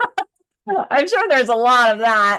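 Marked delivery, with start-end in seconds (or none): 0.9-2.4 high, loud laughing. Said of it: "I shouldn't laugh".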